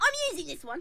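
put-on very high-pitched street urchin kid voice.

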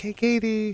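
quiet, soft, suggestive voice.

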